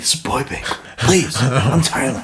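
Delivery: put-on serious voice. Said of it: "He's getting all serious".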